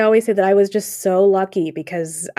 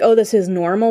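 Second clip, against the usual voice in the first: ordinary talk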